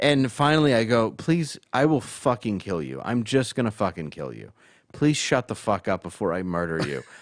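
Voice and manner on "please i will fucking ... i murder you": furious, angry outburst. Retelling going off on a crying cellmate: retelling own angry outburst. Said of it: "I just go off on this dude".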